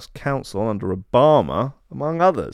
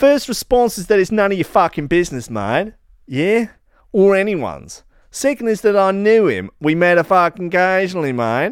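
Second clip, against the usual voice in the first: loud, raised, fake Australian accent throughout; 7 semitones higher, 5 dB louder than usual. Voicing Chomsky's reply to a comment request: Chomsky in a put-on Australian accent. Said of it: "So just to presume he's Australian".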